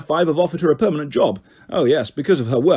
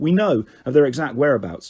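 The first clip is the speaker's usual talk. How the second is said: usual speaking voice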